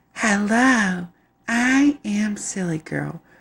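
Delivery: very high, very slow doll voice. Showing what the doll sounds like: Silly Girl doll voice. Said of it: "this is what her voice sound like".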